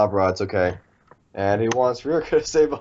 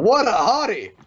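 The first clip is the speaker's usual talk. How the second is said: very high-pitched squealing yell, acted out; 11 semitones higher than usual. Retelling a character's first reaction on seeing him: imitating someone yelling. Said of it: "the first thing she did upon seeing him was yell".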